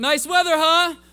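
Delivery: overshooting volume, put-on. Acting out talking too loud when nervous, retelling a too-loud nervous remark. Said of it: "I talk, like, a little too loud".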